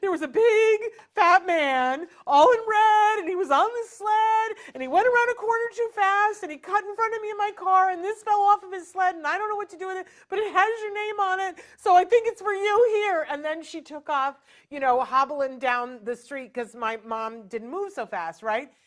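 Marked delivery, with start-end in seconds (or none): 0.0-13.3 put-on very high, raised, all-emotional voice. Retelling what a woman said to a boy named Joey, imitating her getting emotional. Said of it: "and she got all emotional".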